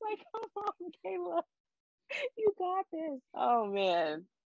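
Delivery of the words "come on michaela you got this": mock screaming shout, higher. Retelling rooting for a contestant while watching, imitating own screaming at TV. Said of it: "I was literally screaming at my T V".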